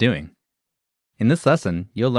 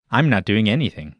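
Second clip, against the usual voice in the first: normal talking voice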